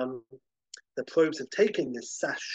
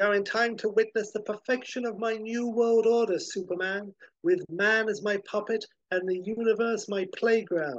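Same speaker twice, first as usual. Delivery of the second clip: gloating, high cackling villain voice, acted out; 7 semitones higher than usual. Retelling a comic scene, voicing Ultra as he addresses Superman: retelling Ultra's cackle. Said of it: "And Ultra cackles".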